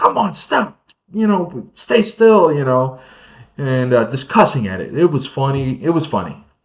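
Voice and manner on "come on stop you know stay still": very high-pitched, shrill, raised yelling holler. Speaker retells a man yelling at a fish he caught, imitating someone yelling at fish. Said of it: "yelling at the thing like".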